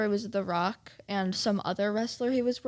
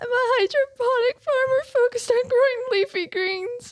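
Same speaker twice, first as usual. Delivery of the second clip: very high, loud, blubbering fake crying; 8 dB louder than usual. Playing a card game where each player reads their card while crying, mock crying. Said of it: "You have to cry as you say yours".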